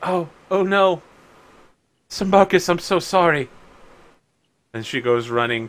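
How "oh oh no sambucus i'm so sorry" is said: overwhelmed with emotion, higher, louder. A game master voices a woman who just coughed blood on sambucus: overcome with emotion. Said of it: "She's so overcome with emotion".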